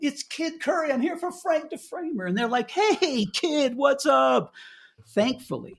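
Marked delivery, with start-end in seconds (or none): 0.0-2.3 put-on shout, high-pitched and raised. Recounting falling out of a car and yelling to people arriving: retelling a yell. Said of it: "I'm yelling".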